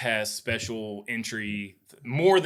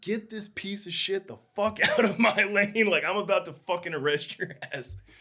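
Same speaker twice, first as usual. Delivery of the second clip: mock, shrill, very high screaming; 9 semitones higher than usual. Retelling how a border patrol agent screamed at the speaker, imitating a border agent screaming. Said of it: "agent dude screaming at me like".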